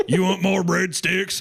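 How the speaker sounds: creaky, high-pitched manager voice. Arguing that a restaurant manager would not care, imitating the restaurant manager. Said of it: "They're going to be like".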